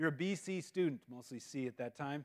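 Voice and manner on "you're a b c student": usual speaking voice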